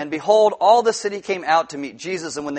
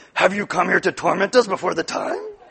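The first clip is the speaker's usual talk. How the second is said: put-on possessed demon voice. Reading a Bible verse aloud, voicing the demons: demon voice. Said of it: "But do the voices!".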